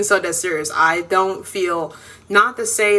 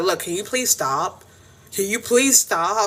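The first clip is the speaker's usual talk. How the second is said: mock joking tone, half-playful with a serious edge; 3 dB quieter than usual. Retelling a boyfriend asking his girlfriend to stop: imitating someone playful but serious. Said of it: "he would be playful, but he'd be sounding, like, kinda serious".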